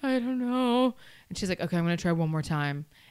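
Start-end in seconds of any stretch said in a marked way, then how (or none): 0.0-0.9 play-acted, high, tearful, words pushed through tears. Speaker retells her reply when asked if she needed a minute, imitating herself crying. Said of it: "I'm like crying and I'm like".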